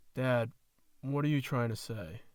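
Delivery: ordinary delivery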